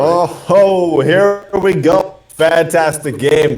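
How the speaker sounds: forced enthusiastic voice. Telling the gentlemen to sound more enthusiastic, then doing it: forced enthusiastic. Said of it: "got to sound a little bit more enthusiastic".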